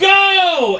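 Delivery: slow, high-pitched scream.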